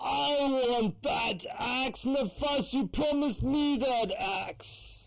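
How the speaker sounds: put-on drunken monster voice, very high-pitched. Voicing a drunk minotaur who demands an axe: drunk minotaur voice. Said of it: "drunk minotaur".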